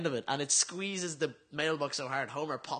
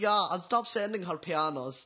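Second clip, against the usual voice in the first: put-on German accent; 3 semitones higher than usual. Retelling a joke line from an episode: German accent. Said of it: "you do a German accent".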